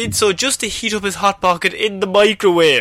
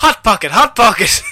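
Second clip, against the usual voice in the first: mock thrilled, worked-up, excited man's exclamation; 3 semitones higher, 4 dB louder than usual. Retelling a man's answer to a reporter, imitating an excited man. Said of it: "try and do his in excitement justice".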